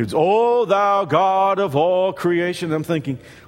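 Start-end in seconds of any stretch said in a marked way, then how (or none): 0.2-2.7 very slow, drawn-out, solemn, churchy prayer tone. Recalling a man who changed his voice when he started to pray: imitating a churchy prayer voice. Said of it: "like stained glass windows and pipe organs started playing".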